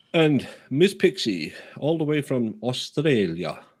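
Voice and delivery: sudden, botched, put-on Australian accent. Livestreamer thanking a viewer from Australia, in a sudden put-on accent. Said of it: "I did that that, that accent. It's not Australian".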